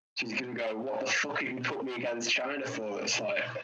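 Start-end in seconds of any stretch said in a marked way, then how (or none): none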